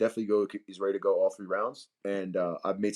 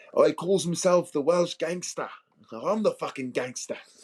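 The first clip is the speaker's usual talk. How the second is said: put-on British accent, pitched up; 8 semitones higher, 3 dB louder than usual. Showing how he would talk during fight week, doing a put-on accent. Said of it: "I could do accents".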